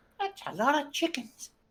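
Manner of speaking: voiced high-pitched stage whisper. Voicing a character in the scene: half-whispering. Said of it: "you hear Nebel whisper".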